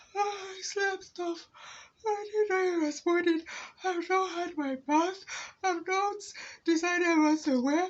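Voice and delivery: whiny voice. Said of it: "He was just whining and whining and whining".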